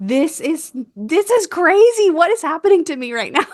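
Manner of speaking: mock, loud, high-pitched yell. Retelling reacting during labor in the tub: imitating own past yelling. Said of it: "yelling and I was like".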